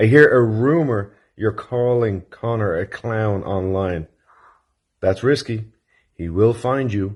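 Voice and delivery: low voice. Passing on a rumor to a listener, the speaker keeps a lowered voice. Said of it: "I've got to keep my voice down".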